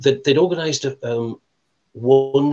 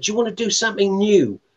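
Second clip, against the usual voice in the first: put-on lovely broad Cockney accent, pitched a touch high; 8 semitones higher than usual. Retelling what he said to you, Rob, before he started playing, in a broad Cockney accent. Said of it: "in his broad, lovely broad Cockney accent".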